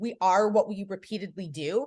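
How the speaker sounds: ordinary delivery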